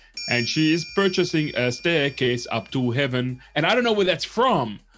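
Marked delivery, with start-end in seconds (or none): 0.3-3.4 male voice with a put-on Indian accent. Speaker quotes a line stuck in their head, in a guy's Indian accent. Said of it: "a guy with an Indian accent saying".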